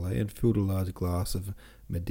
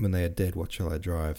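usual speaking voice

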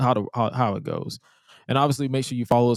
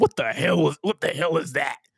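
put-on drunk man voice, higher pitch; 5 semitones higher than usual. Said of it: "he sound like a drunk uncle who's a recovering alcoholic".

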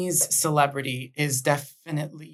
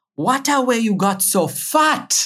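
raised, slow put-on Jamaican accent; 7 semitones higher, 5 dB louder than usual. Quoting what grandma would say on seeing the grandkids, imitating grandma's Jamaican accent. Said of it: "my grandma speaks with the Jamaican accent".

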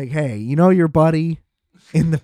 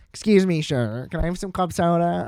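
copied plain everyday tone, polite manner; 3 semitones higher, 3 dB quieter than usual. Retelling what the listener said at the table, imitating a friend's voice. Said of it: "That's what you sound like right now".

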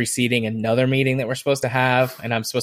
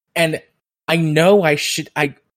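normal talking voice

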